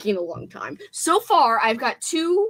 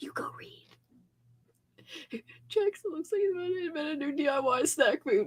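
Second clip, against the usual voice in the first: whisper, higher and quieter; 4 semitones higher, 8 dB quieter than usual. Telling someone to go read, then commenting on jackson: whispering. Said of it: "Why am I whispering like a weirdo?".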